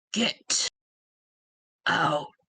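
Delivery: very deep, resonating voice. A voice replying to a visitor who claims to be a friend, very deep and resonating. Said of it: "You hear a very deep, resonating voice".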